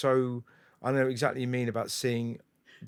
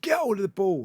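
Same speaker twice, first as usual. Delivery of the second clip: mock coach barking, raised, pitched-up shout; 7 semitones higher, 4 dB louder than usual. Retelling a childhood memory of the manager yelling, imitating Bob shouting. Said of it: "our manager Bob shouted at me".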